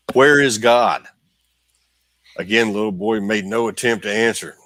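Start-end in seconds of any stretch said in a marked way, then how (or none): 0.2-1.1 stern, raised, even sterner preacher voice. Storyteller voicing a preacher repeating his question to a boy, imitating a sterner tone. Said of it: "in an even sterner tone".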